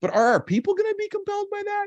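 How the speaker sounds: sudden falsetto flip, very high, climbing upward. A speaker talking to an audience about business strategy, slipping into falsetto. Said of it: "I went into that falsetto just there".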